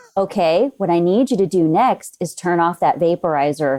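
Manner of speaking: put-on very calm, flat monotone. Retelling own words when things are real bad: imitating very calm monotone. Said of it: "very calm and monotone".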